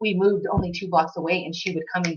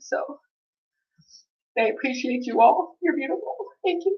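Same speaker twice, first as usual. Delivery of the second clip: tearful, high crying voice; 7 semitones higher than usual. Parent thanks the people who were there while their son was in the ICU: crying, tearful. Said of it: "Sorry, I'm crying".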